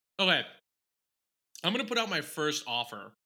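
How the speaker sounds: talking through a full mouth while chewing. Making a first offer while eating snacks, talking with mouth full. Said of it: "Sorry, I have Cheez-Its in my mouth".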